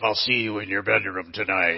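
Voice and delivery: low, grisly possessed-demon voice. A speaker shows his audience the voice he nearly tried on the kids: Exorcist demon voice. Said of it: "the demon's grisly voice".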